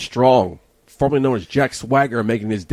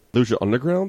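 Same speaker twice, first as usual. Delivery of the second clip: ordinary talk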